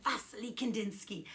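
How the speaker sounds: put-on, classroom-style Russian accent. Speaker teaching a painter's name for kids to remember, Russian accent. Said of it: "Let's get that Russian accent".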